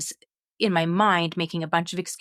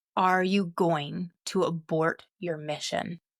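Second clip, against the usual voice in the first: mock booming, imitated loud voice. Retelling a voice she heard while shaken beside her husband, imitating a booming voice. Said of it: "Voice booms again".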